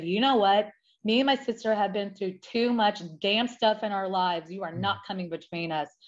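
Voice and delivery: ordinary talk, nothing marked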